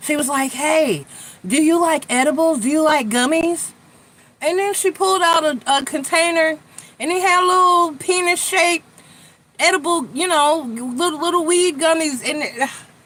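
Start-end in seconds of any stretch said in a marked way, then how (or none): 0.5-3.7 excited, higher and louder. Retelling a store clerk offering edibles: imitating someone excited. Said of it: "she was all excited about it".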